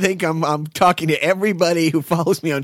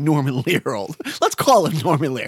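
normal talking voice

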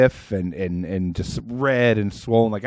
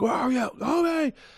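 put-on, shrill, very high, desperate scream; 4 dB quieter than usual. Retelling calling out for his missing dog, retelling a scream. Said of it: "like I start screaming like".

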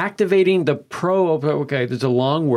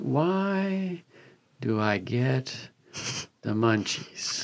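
very slow, hushed, halting stoner drawl, "why" stretched out; 3 semitones lower, 9 dB quieter than usual. Explaining the segment's name by quoting the stoner's question: imitating a slow stoner. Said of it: "I like how slowly you said that".

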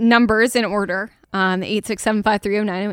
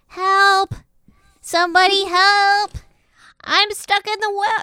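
put-on very high-pitched small boy's voice, calling out; 10 semitones higher than usual. Describing a tunnel where a little boy's voice calls out, little boy voice. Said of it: "you can hear a voice of a little boy, and he goes".

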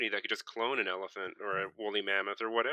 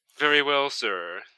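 snooty butler voice, pitched higher; 2 semitones higher than usual. Demonstrating how butlers sound, snooty butler voice. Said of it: "They all sound like this. Very snooty".

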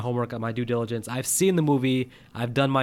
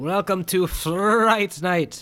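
put-on accent from Transylvania; 6 semitones higher than usual. Speaker opens a review of the original film, quoting it in a Fright Night movie accent. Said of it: "What kind of accent was that?".

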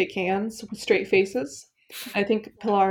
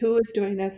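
usual speaking voice

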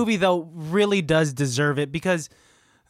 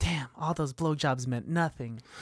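put-on whisper under breath, quieter; 2 semitones lower, 9 dB quieter than usual. Retelling a film scene, quoting a character muttering: imitating Susie whispering under her breath. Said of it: "whisper under her breath saying".

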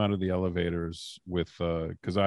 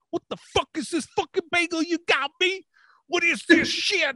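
mock screaming, higher; 3 dB louder than usual. Retelling how a boss screamed after a crown came loose: imitating someone screaming. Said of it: "he starts screaming".

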